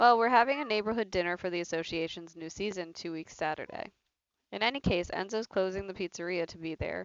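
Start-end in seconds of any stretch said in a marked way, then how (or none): none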